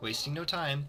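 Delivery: plain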